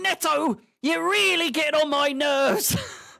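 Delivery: very high-pitched, shrill, loud, exasperated angry rant. Reacting to a player during the match: angry like Goldbridge. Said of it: "I sounded like Goldbridge there".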